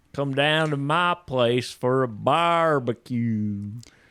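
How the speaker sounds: put-on rural Canadian voice. Contrasting how people talk, speaker imitates rural Canadians: imitating rural Canadian talk. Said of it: "In rural Canada, they talk like this".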